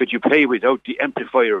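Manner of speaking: thick, broad, very strong Irish brogue. A musician recalls the manager interrupting his first live gig: very strong Irish accent. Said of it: "in a very very strong Irish accent".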